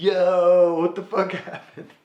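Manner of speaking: slow, high, loud call with long stretched "yo". Retelling what Jesse said when the driver got back: Jesse Wood voice. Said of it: "I can't even do Jay Wood's voice".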